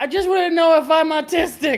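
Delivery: put-on very high, full-volume child shout. Voicing a young child asking a question: shouting as loud as possible. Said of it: "as loud as voice he can".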